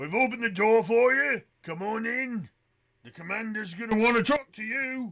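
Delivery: very loud, high shout calling down from above. Game master voicing a dwarf as the door opens: dwarf shouting down. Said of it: "the dwarf shouts down at you".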